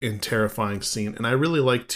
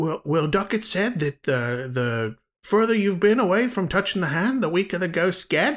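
put-on Australian accent with raised pitch; 7 semitones higher than usual. Quoting Duckett's older brother Cole from the film, in Cole's Australian accent. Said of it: "Huge air quotes Australian accent".

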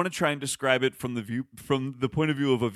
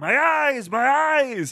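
very high, very slow, drawn-out, shrieking wail; 11 semitones higher, 7 dB louder than usual. Recounting a film's voiceover during a march, imitating Nicolas Cage screaming. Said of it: "He screams something like".

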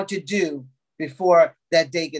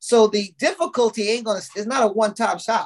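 usual speaking voice

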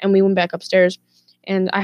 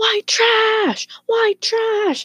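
put-on very high, drawn-out, top-of-the-lungs screaming. Speaker retells the neighbor yelling at the sister, imitating Steve screaming. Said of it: "started screaming at the top of his lungs".

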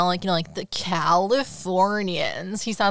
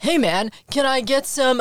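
overdone, slow, put-on bro dude voice; 6 semitones higher, 4 dB louder than usual. Describing how she talks while impersonating her brother: imitating a dude voice. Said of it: "she's talking like".

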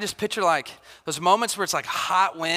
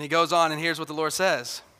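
ordinary talk

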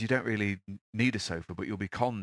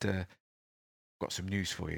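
very soft, very quiet, hushed delivery; 5 dB quieter than usual. Retelling what a guru told 300 people on stage, in a very quiet voice. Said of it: "in a very quiet voice".

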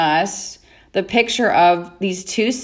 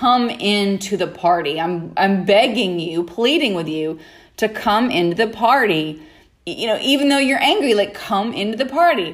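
ordinary delivery

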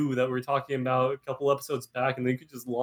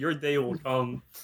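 plain

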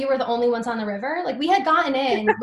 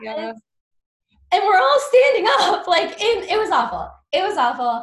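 shouting, high-pitched and full of anxiety; 6 semitones higher, 3 dB louder than usual. Telling a whitewater rafting story, the speaker is anxiously shouting. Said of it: "Now I'm shouting because I'm full of anxiety".

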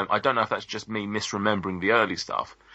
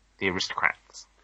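put-on cartoon kid voice, quieter; 2 semitones lower, 4 dB quieter than usual. Recalling a cartoon version of the joke in Cartman voice. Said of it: "is that your Cartman impression?".

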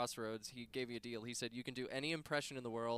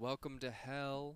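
put-on slow, creepy, smooth voice; 4 dB quieter than usual. Asked for an impression of the devil: slow creepy devil voice. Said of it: "My impression of the devil?".

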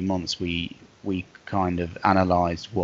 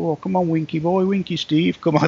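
very high, badly done Yorkshire accent; 10 semitones higher, 5 dB louder than usual. Explaining where the speaker's Twitter name came from, doing a bad impression of Grant. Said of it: "That was my bad impression of Grant".

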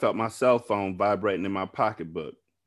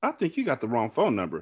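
ordinary delivery, nothing marked

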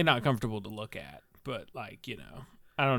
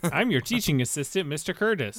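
mocking, higher-pitched mimicking tone; 6 semitones higher, 4 dB louder than usual. Greeting the class as the teaching assistant, mocking imitation of Professor Jacob. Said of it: "Sounds like he's mocking me".

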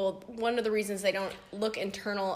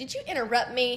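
mock sassy woman's voice; 4 semitones higher than usual. Retelling an insurance company woman's reply on the phone, imitating a sassy woman. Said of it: "she was real sassy on the phone".

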